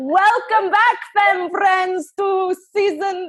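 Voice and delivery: very high, loud attempted Scottish accent. Opening the show for listeners, attempting a Scottish accent. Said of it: "intro this one with the Scottish accent".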